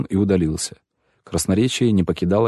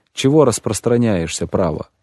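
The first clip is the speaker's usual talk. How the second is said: usual speaking voice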